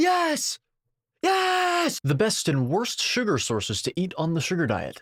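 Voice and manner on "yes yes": high screaming at full volume.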